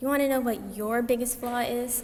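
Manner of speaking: normal talking voice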